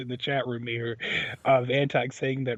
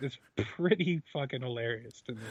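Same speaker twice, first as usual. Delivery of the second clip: normal talking voice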